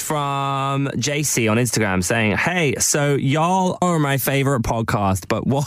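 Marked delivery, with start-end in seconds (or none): 2.4-5.7 fake, put-on American accent on the word "y'all". Reading out a listener's message, putting an accent on. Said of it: "I put an accent on then".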